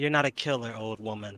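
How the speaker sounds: hushed, half-whispered voice. Half-whispering one sentence to a raging ally to calm him: half-whispering. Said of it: "you have one sentence to whisper to him".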